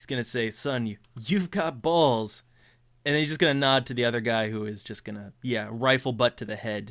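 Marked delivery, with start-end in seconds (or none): 0.5-2.4 put-on old man voice chuckling through words. Voicing the old man laughing at Davis's failed punch: laughing old man. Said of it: "he's just laughing at Davis's attempt there".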